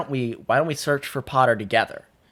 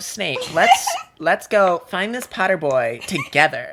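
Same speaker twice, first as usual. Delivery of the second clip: put-on full-on, high, swooping valley girl voice; 7 semitones higher, 3 dB louder than usual. Speaker voicing Filch talking to Snape, in a Valley Girl voice. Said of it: "Filch should have a Valley Girl voice".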